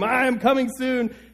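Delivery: leaning-in, high-pitched scream. Recounting a man with a microphone leaning toward the front row, retelling a scream. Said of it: "leaning over to scream".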